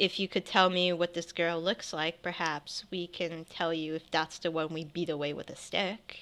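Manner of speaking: soft, hushed, quiet, low-key delivery. Recounting a play, the speaker acts out a character at the door, retelling a quiet line. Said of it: "He says in like a quiet voice".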